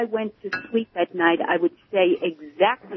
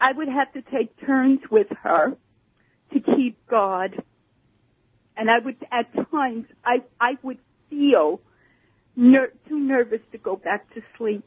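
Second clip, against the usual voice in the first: stirred-up, emotional, higher-pitched voice; 5 semitones higher than usual. Telling about taking turns keeping guard with mom at night, getting emotional. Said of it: "I can't believe how emotional I'm getting about this".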